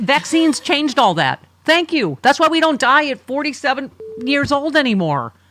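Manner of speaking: full-volume, very loud, high-pitched yell. Making a point after listing old causes of death: yelling. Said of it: "sorry, I'm yelling".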